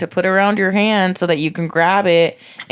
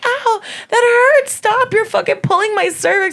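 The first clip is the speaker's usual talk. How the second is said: mock very high, tearful, pained crying out. Retelling what she told him while he pulled, imitating crying in pain. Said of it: "I just kept crying and telling him".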